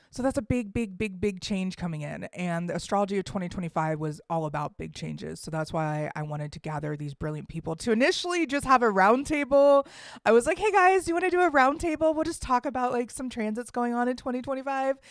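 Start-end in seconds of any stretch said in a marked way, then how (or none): 10.5-14.9 put-on high, over-eager, excited dumb-sounding voice. Recalling inviting friends to a roundtable, the speaker quotes their past self: imitating own dumbass excited voice. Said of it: "This is my dumbass voice".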